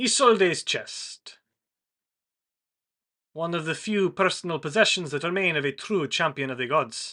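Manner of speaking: grand, proclaiming announcer voice like a herald. Narrating a scene, speaker gives the line of a voice that booms out: booming voice. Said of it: "a voice booms out again".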